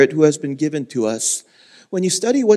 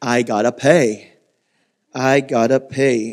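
put-on thick southern accent, slow, drawn-out drawl; 4 semitones lower than usual. A former youth pastor recalls a line from the movie, in Forrest Gump's thick southern accent. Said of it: "In his thick southern accent".

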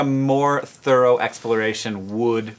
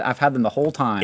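usual speaking voice

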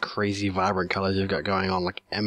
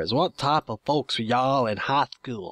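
put-on American southern accent; 5 semitones higher than usual. Reading out this week's question when another speaker asks for it; southern accent. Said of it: "do I have to read this with a southern accent?".

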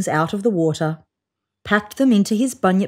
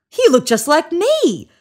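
cheerful, delighted, happy, high-pitched; 8 semitones higher than usual. Narrator reads the bunyip answering the other bunyip's question, happily. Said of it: "said the bunyip happily".

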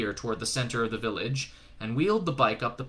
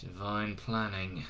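muttered under his breath, much quieter; 3 semitones lower, 8 dB quieter than usual. Narrated scene, a man answers a woman's remark, muttered under his breath. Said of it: "muttered Crowley under his breath".

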